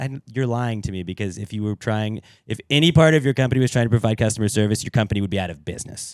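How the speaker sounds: normal talking voice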